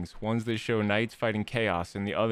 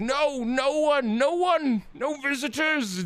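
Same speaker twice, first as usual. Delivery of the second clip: mock panicked, very high, stretched-out freak-out; 4 dB louder than usual. Voicing the crowd in the room as the party appears: freaking out. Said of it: "They're all, like, freaking out".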